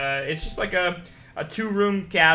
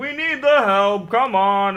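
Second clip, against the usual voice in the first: loud, drawn-out, teasing, good-natured holler; 5 semitones higher, 7 dB louder than usual. Voicing a muffled call from inside a building: playful yell. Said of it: "like a playful, like, yell".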